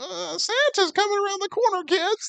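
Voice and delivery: very high, slow elf character voice. Asked on the spot to try an elf voice, high-pitched elf voice. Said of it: "Like a high pitch sort of like".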